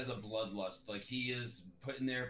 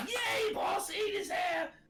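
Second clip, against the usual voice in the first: drawn-out, very high, loud goblin cheering; 7 dB louder than usual. Voicing a clapping goblin cheering on its boss: goblin cheering. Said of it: "the goblin just starts clapping".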